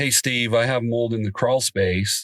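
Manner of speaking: plain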